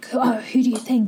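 hushed whispering. Game narrator voicing market bystanders gossiping to each other, whispering. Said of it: "they immediately start whispering to each other".

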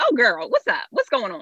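relaxed, chummy, casual tone with swooping pitch. Retelling switching on the phone to a girlfriend: imitating her casual voice with a girlfriend. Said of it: "it's one of my girlfriends".

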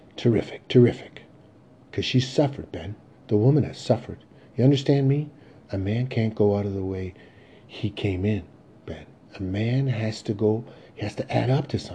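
ordinary delivery, nothing marked

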